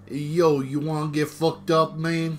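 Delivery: very loud, botched, bad Boston accent. After being told not to do voices, doing a bad Boston accent anyway. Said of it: "just don't do bad Boston accents".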